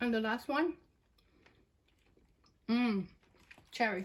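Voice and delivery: speaking while chewing, mouth full of candy. Tasting candies for viewers, naming the last flavor, mouth full of candy. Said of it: "Let me chew this candy so I can speak".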